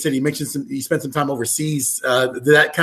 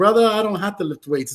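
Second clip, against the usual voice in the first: put-on Samoan accent, pitched slightly high; 6 semitones higher than usual. Retelling what a huge Samoan man he knew told him, Samoan accent impression. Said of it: "That's my best Samoan accent".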